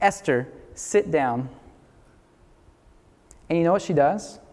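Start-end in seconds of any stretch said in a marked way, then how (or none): 0.0-1.5 firm, stern, no-nonsense delivery. Retelling ordering her to stop rocking the chair, retelling a stern command. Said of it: "I tell her in a stern voice".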